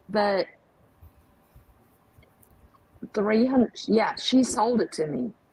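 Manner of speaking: speech broken by hiccups. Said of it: "I have the hiccups".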